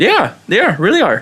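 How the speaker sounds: voice jumping up high.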